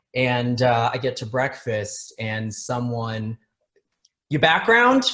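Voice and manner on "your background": mock, very high, raised, accusing challenging tone. Retelling how someone at breakfast questioned him: imitating an accusatory question. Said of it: "Very accusatory".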